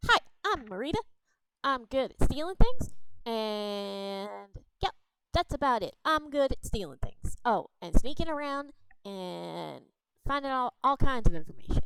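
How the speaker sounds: little goblin character voice. Voicing a goblin who jumps on a table to introduce itself: voicing a goblin. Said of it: "the little green fella jumps up on the table and goes".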